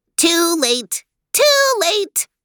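very high, slow, swooping tinny hiss. Reading the voice from the downed Chukar answering Max, a tinny hiss. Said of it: "hissed a tinny voice".

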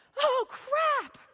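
sudden, shrill, very high, startled shriek. Retelling how a new husband flew out of bed on the honeymoon night, imitating a scream. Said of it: "and screams".

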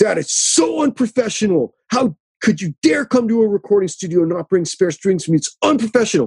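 high-pitched, berating scolding tirade. Retelling how the studio engineer scolded him over a broken string: imitating someone yelling. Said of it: "starts yelling at me".

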